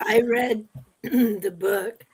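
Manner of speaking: voice giving out, failing. Talking about a book she read, her voice giving out. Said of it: "Sorry, voice is going".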